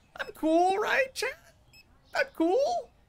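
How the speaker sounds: rising pitch. Asking the chat for reassurance, voice rising higher and higher. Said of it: "Voice gets higher and higher".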